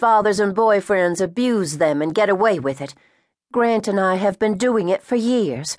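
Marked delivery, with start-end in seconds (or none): none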